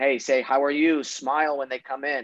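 ordinary talk

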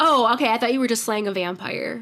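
acted casual, nonchalant voice. Retelling a scene where Ford sees a vampire slaying: nonchalant Ford impression. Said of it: "he says it just so nonchalant".

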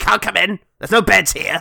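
put-on high, rough, creaky, cranky old hag voice. Describing a bickering old brother and sister, voicing the sister: old hag style voice. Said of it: "just sort of old hag style kind of character".

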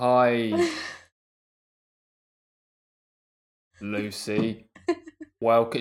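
very slow, low, painfully drawn-out speech. Suggesting a slow start to a sloth talk, greeting a guest, talking really, really slowly. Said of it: "talk really, really slowly".

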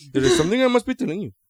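put-on Indian English accent, formal phrasing. Doing a line in the accent from the film: imitating Ben Kingsley's Gandhi accent. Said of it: "the only words I know how to say in that accent".

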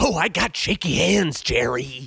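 fast, rushed delivery. Acting out Kramer bursting through the door, doing a Kramer impression. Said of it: "You know how he does real fast?".

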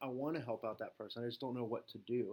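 usual speaking voice

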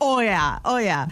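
put-on thick, laid-on Minnesota accent. Retelling meeting a guy named Josh, quoting his reply; imitating Josh's Minnesotan accent. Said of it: "he's got the strongest Minnesotan accent".

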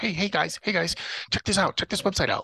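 small, high little voice. Retelling how a friend showed a website to the group: imitating Marcus's little voice. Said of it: "Marcus's little voice".

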